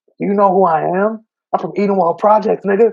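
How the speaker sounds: shrill, very high-pitched, loud scream. Recounting a man on a train getting hyped to fight, retelling a scream. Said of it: "he's screaming like".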